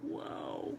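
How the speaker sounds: quiet hushed whisper.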